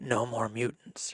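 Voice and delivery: soft, hushed stage half-whisper. Retelling a comic-book character's famous line, half-whispering. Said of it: "She like whispers it".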